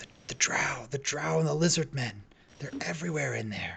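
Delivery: whispered, hushed voice. Voicing hushed voices overheard while going through: whispering. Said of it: "it sounds like they're whispering two voices back and forth".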